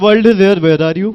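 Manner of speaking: imitated thick Indian accent. Retelling how certain people talk, in a thick Indian accent. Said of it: "ठेठ इंडियन एक्सेंट में बोलते हैं".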